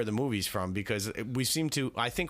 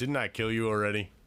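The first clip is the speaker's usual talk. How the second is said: big, low, deep put-on movie voice. Playing a movie-quote guessing game with others, quoting a line in a big deep voice. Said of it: "Big deep voice".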